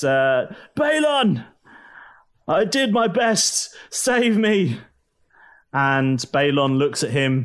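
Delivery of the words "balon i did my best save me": high, drawn-out scream stretched long. Narrating the story, the speaker voices the bleeding governor, screaming. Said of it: "he screams out and he says".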